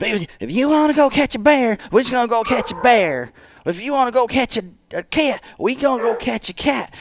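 put-on Southern accent. Imitating a crazy man who never spent a day in the south, do a put-on southern accent. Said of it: "He talk like this. He never spent a day in the South".

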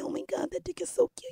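put-on baby talk, cooing, breathy and whispered. Showing how someone talks in bed: put-on baby talk. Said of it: "when you get into the baby talk".

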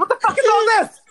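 mock very high, outraged, top-of-the-lungs shriek. Retelling an outburst on hearing all the charges: retelling own screaming. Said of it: "I was screaming at the top of my lungs".

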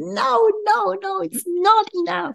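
very high, slow, drawn-out crying. Acting out an inner voice that says it is not enough: imitating crying. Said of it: "crying like".

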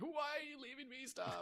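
mock very quiet, high, heartbreaking pleading. Recapping a scene, acting out a character's plea to her twin: heartbreaking plea. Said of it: "really heartbreaking".

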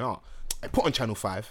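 aggressive, mad-sounding way of talking. Retelling a friend's message, imitating him talking aggressively. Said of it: "that's how he talks".

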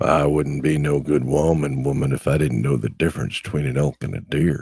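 put-on deep, low woman's voice. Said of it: "I can't do her voice 'cause my voice doesn't go deep enough".

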